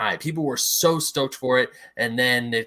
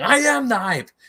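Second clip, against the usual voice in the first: very high, loud shrieking scream; 11 semitones higher, 5 dB louder than usual. Retelling getting overhyped in the past, screaming like Vegeta. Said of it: "I'm like screaming like Vegeta".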